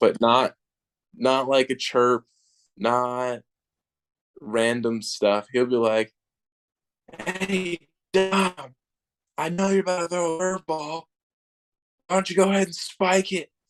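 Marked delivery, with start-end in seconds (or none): 7.2-13.4 mock, shrill, very high heckling yell. Retelling how a fan behind home plate heckles the pitcher: imitating a fan yelling. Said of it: "he's just yelling at you the whole time".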